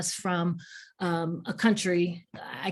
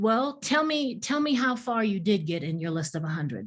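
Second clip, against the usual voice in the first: ordinary talk, nothing marked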